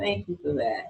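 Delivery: with a chuckle. Thanking someone at the break before reminding folks about the q&a box, chuckling.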